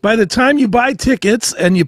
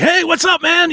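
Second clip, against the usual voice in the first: put-on, all amped up, very high pitch; 10 semitones higher than usual. Retelling meeting Wednesday 13 backstage: imitating Wednesday 13 all amped. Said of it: "he's all amped".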